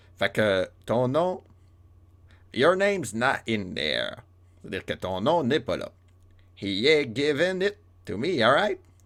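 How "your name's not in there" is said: weak attempted put-on Irish accent. French speaker quoting an english line, admitting he can't do it: bad irish accent. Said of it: "je maîtrise pas trop l'accent irlandais".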